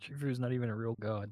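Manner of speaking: grumbling to oneself. Muttering a remark about a god while another character monologues: muttered under the breath. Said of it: "under my breath, I'm like".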